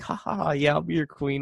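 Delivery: normal talking voice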